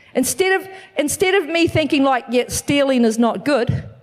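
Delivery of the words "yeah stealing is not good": ordinary talk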